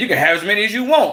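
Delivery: mock, slightly snippy tone with a little attitude. Retelling what an old man at the polls said: imitating someone with attitude. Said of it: "he had a little attitude with the shit".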